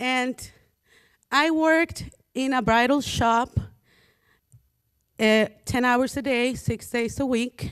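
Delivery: tearful, choking-up voice, on the verge of tears. Speaking of working at thirteen to help their mother, who is present: about to cry. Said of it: "I'm gonna cry because she's here".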